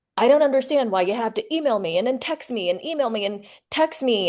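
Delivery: mock angry, complaining rant. Retelling a phone call where the rental client yelled: imitating a client yelling. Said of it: "he was just yelling at me and saying".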